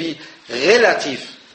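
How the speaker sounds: stress on relativ, drawn out slow and wide.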